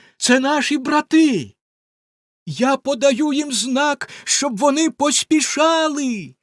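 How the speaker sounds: exclaiming. Sister Anne calls out to her sister, exclaiming. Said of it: "вигукнула вона".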